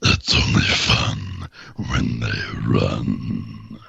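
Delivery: very slow, breathy werewolf whisper, breathed out. Performing a game line after being asked: Warwick voice. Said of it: "so this is Warwick, the, uh, the, uh, uh, werewolf".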